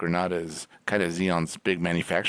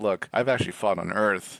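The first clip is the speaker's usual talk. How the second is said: ordinary talk, nothing marked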